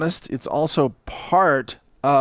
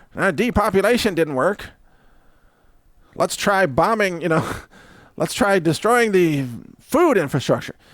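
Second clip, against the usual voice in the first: high, mocking caricature voice; 5 semitones higher than usual. Imitating a globalist disappointed that depopulation failed: mocking a globalist's voice. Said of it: "I was mocking a voice of a different globalist".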